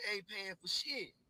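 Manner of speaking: put-on, toned-down half-hollered call. Retelling what a girl in the store hollered: imitating someone hollering. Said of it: "I hear her holler".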